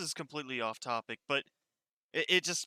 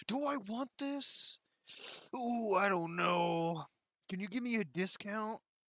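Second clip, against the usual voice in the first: high, drawn-out, dithering indecisive voice. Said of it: "they're just standing there like".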